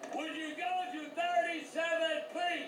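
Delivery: furious yelling, pitched high.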